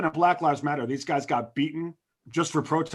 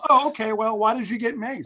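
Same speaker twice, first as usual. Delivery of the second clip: acted cool, calm, matter-of-fact, unbothered tone, pitched up; 6 semitones higher than usual. Retelling a video, the speaker quotes a man questioning his crying girlfriend, retelling a calm reply. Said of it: "the guy calmly goes".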